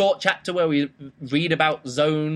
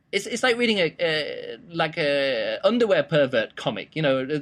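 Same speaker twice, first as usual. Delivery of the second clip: ordinary delivery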